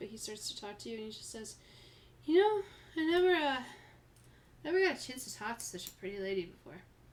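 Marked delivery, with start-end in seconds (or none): 2.3-6.8 put-on loud, tipsy, slurred drunken rambling man's voice. Voicing a tipsy bar patron talking to a player: slurred drunken speech. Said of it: "his speech is slurred".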